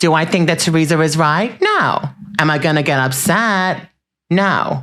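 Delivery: put-on New Jersey housewife voice. Showing off impressions to Bravo fans, after one of Siggy, now do a Dolores impression. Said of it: "That's Dolores".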